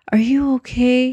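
small, high, timid, meek little voice. A boy who just apologized checks on a girl, in a small voice. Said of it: "He asked in a small voice".

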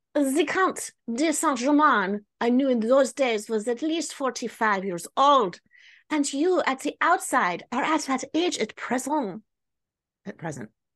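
terrible, badly done put-on French accent. Narrator reads the perplexed countess's reply to the count: horrible French accent. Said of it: "My horrible French accent".

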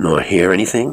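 said sharply. Cranshaw questions the lightkeeper, sharp. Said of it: "asked Cranshaw sharply".

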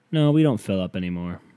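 mock most dejected, hopeless, deeply deflated tone. Retelling a woman's answer when asked about a reservation, in a mock-depressing tone. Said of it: "in the most depressing-ass tone".

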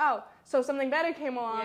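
ordinary delivery

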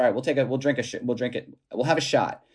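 ordinary delivery

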